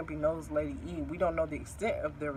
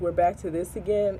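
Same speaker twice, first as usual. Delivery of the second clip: ordinary talk, nothing marked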